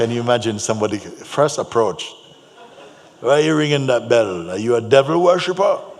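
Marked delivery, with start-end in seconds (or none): 3.2-5.8 loud, very crusty big-man street voice. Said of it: "very crusty voice".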